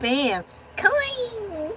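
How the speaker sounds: leprechaun-style voice, very high and drawn-out. Thanking someone for a gold coin after a high five: leprechaun-sounding voice. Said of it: "I sound like a leprechaun".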